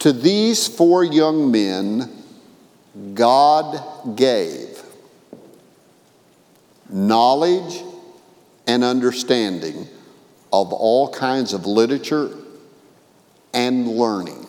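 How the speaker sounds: slowed-down reading. Reading a key Bible verse aloud to listeners, reading more slowly. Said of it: "I'm going to read it more slowly".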